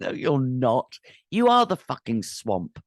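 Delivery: furious, angry, cursing outburst, let rip. Speaking to viewers about being unable to withdraw crypto funds, angry. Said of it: "Sorry, I'm angry here".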